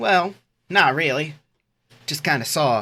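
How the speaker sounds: put-on Southern lady accent, cheery. Playing the MAGA hat lady, questioned about the dead guy: attempted Southern accent. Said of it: "Southern accents are fucking hard".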